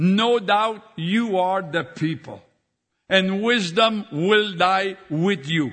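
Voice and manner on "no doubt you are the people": ordinary delivery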